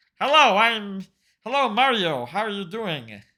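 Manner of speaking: put-on nasal character voice. Showing how Yoshi sounds in that level, nasal Yoshi voice. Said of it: "Yoshi is sort of a nasally voice".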